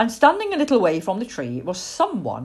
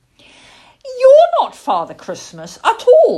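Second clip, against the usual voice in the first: shrill, loud, annoyed outburst, very high pitched; 10 dB louder than usual. Plop, just set upright by a young lady, speaks to her crossly. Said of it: "he said crossly".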